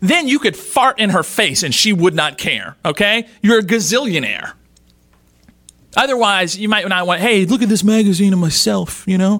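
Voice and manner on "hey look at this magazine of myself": gangster-style voice. Acting out what not to say to her, Godfather impression. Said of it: "That sounds more like a Godfather impression".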